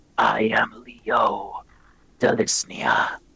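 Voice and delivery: whispered, hateful, ghostly rasping voice. Narrating a story, a skeletal figure speaks in a hateful voice; Leo Delisnia's rasp. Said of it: "the figure rasps".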